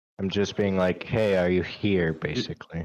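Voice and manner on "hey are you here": mock courteous, polite, gentlemanly calling voice. Repeating own call to a deity for the others: retelling own raised-voice call. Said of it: "Just with a little bit more raised of a voice".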